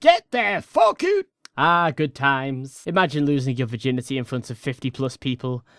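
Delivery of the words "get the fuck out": put-on shrill, very high-pitched yell in a Scottish accent. Repeating the friend's yell that became a meme: imitating Scottish yelling in a Scottish accent. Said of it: "Scottish yell at us in the fucking accent".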